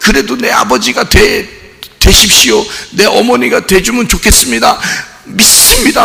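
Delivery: high, tearful, sobbing, pleading tone. Retelling a person begging a stranger to be his father: imitating someone crying. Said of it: "막 울면서".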